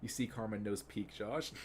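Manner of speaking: ordinary talk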